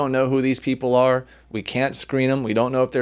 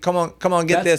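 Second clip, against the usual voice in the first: put-on Australian accent, pitched up; 5 semitones higher than usual. Imagining a butcher with an Australian accent: put-on Australian accent. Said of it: "the butcher with an Australian accent".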